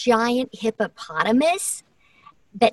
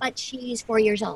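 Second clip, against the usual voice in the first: normal talking voice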